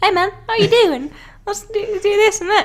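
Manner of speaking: cute, high-pitched, put-on New Zealand accent. Speaker imitating a giant rock monster character greeting someone, in a high-pitched Kiwi accent. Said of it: "he's got the most adorable like Kiwi accent too".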